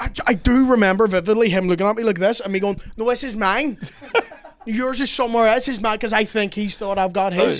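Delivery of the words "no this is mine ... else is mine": mock drunk, stubborn, pitched-up voice. Retelling a drunken struggle over a phone: imitating own drunk self. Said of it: "I was that drunk".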